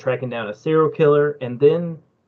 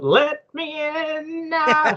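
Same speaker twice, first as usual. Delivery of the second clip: very high, very slow, drawn-out voice; 13 semitones higher than usual. Joking about showing up as Longlegs for Halloween: Longlegs voice. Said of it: "I just show up to your folks' house and I go".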